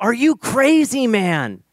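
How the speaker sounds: mock very high, stretched-out, drawn-out scream. Retelling how Joel screamed in the speaker's face: imitating Joel screaming. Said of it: "So Joel screams in my face".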